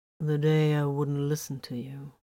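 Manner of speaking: plain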